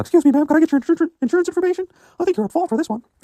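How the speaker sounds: very high falsetto put-on character voice. Hypothetical words to a woman who drives a pickup, higher-pitched put-on voice. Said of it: "I did a higher pitch voice for that one".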